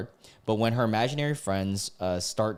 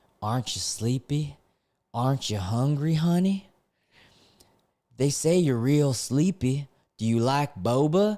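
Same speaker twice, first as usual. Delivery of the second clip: creepy, sweet-talking, scarily gentle tone; 4 semitones higher than usual. Reading a story, she speaks to the driver from the rear view in a scarily soft voice. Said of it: "says in a scarily soft voice".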